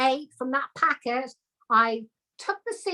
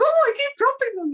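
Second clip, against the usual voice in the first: put-on, very high-pitched Welsh accent; 9 semitones higher, 3 dB louder than usual. Retelling Laura dropping tomato seeds at a workshop: imitating Laura in Welsh accent. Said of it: "in a Welsh accent".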